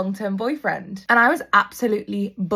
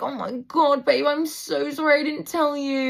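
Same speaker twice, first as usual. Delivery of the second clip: mock sobbing, tearful crying through the words; 5 semitones higher than usual. Retelling what a crying friend said when confronted: imitating someone crying. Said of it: "Amy literally broke down crying".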